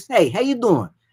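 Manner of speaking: casual New York accent. Announcer explaining work for a longtime client, demonstrating a New York voice. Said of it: "kind of a New York voice, kind of like this".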